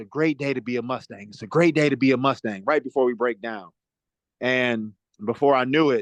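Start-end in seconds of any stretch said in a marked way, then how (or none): none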